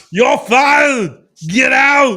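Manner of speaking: very loud, very slow, very high-pitched booming bark. Repeating the firing line for laughs: Arnold Schwarzenegger voice. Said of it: "why did I do it in Arnold Schwarzenegger voice".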